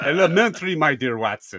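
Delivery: clumsy, laid-on put-on German accent. Recounting people at a German-based company doing a Sherlock Holmes theme: German-accented Sherlock Holmes impression. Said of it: "people with German accents trying to do Sherlock Holmes voice".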